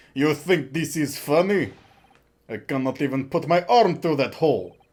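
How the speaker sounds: put-on Russian-accented voice. A Russian character complains to another character, in a Russian accent. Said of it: "Russian laughing".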